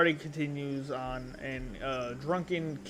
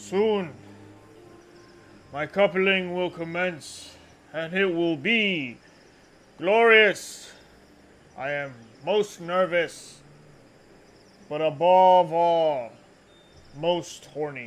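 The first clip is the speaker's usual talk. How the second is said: put-on very loud, tipsy, drunken king voice; 4 semitones higher, 10 dB louder than usual. Role-playing the king speaking to his citizens after the wine: drunk king voice. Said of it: "he's get proper drunk".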